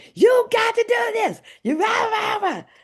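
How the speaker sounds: put-on, very high-pitched, relentless, hyped-up yelling. Retelling how a man in the training room was always yelling: imitating Doctor Marshall yelling. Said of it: "the man that was always yelling".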